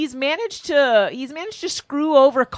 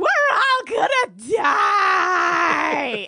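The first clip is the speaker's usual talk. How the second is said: acted, very slow, stretched-out, high panicked scream; 6 semitones higher than usual. Describing a waiter's line from the episode: imitating a waiter screaming. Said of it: "This is a waiter screaming".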